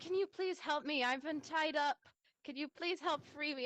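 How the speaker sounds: high, begging damsel in distress voice. A tied-up character asks others to cut the rope: pleading damsel in distress. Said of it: "pleading and be like".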